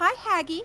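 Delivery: close, high, soft half-whisper. Speaking in character to the hag after a big hit: half-whispering to her. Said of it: "I'm just gonna whisper to her".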